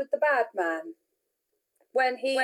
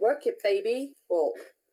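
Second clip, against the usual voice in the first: plain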